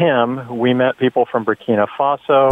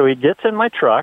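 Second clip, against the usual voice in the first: plain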